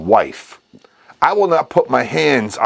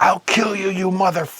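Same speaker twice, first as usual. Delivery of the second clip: put-on screaming, higher; 7 semitones higher, 4 dB quieter than usual. Retelling a kitchen fight, quoting the mother: imitating mom screaming a threat. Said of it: "and they're screaming".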